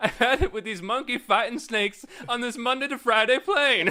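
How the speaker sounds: belted out high and loud. Retelling the censored TV version of the line: censored TV Samuel Jackson line. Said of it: "the censored T V version of that? It was like".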